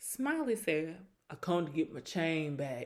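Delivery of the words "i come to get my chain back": put-on low, soft country accent. Retelling what Smiley said at a reunion, imitating Smiley's country accent. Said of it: "why did she sound so country".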